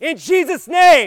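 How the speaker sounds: very loud, high, forceful, punchy delivery. Leading a group in prayer, showing them: praying with punch. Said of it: "I want you to pray with punch".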